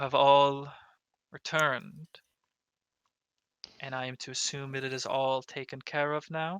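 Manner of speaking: steady, composed, calm, even-toned, soft-spoken delivery. Voicing Farinar as the group returns, Farinar, calm even voice. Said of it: "speaks up with that kind of um, calm, even voice".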